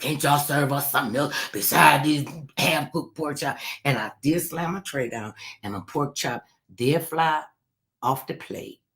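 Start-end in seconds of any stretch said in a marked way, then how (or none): 0.0-3.6 carrying, complaining tone in heavy, raspy smoker-like voice. Retelling what they said in the dining hall, in a heavy raspy smoker's voice. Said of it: "my voice was like real heavy and raspy like this".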